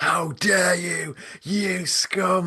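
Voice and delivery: very high, slow, drawn-out, enraged furious voice. Retelling how a pranked man confronted the speaker a week later: imitating a really angry outburst. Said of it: "Like really, really angry".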